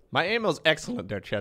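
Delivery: insistent, defensive tone, voice cracking mid-line. Defending own aim to teammates in a game, voice cracking. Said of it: "Your voice cracked too".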